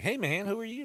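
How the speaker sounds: very high-pitched, squeaky put-on male voice. Imagining a guy with a high voice, in a really high-pitched voice. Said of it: "a guy with like a really high pitched voice".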